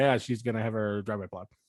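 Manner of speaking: said as fast as possible, rushed. Speaker repeats a sentence for a co-host, saying it as fast as possible. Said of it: "gonna say it as fast as possible now".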